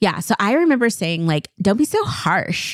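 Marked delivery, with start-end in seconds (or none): 1.6-2.8 put-on valley girl way of speaking. Recalling something the speaker once said about slang, in a valley girl accent. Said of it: "did you say it with that accent?".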